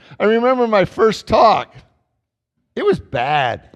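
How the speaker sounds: choked-up voice catching in throat, breaking. Remembering giving a first talk at twenty-five, choking up. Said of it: "start choking up just remembering it".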